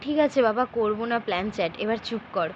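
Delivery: ordinary delivery, nothing marked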